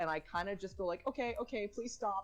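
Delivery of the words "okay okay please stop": high, scared, nervous, frightened pleading. Retelling playing horror games while genuinely scared: imitating own high scared voice. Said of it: "my voice goes high".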